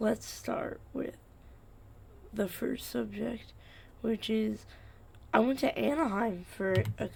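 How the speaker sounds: sleepy voice crack. Starting the first subject right after waking up: voice cracking, just woke up. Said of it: "holy voice crack. I just woke up".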